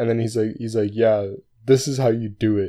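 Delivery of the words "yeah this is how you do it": mock loud, patronizing, condescending know-it-all tone. Retelling what a TA said after a question: imitating a condescending tone. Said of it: "super condescending".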